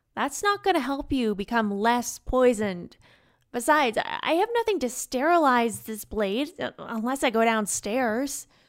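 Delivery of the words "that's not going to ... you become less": plain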